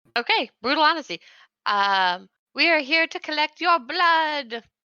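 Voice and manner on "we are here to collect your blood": unconvincing spooky voice, pitched up. In a role-play, answering a character who asks their mission, trying to sound spooky like Oliver. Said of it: "I tried to be spooky".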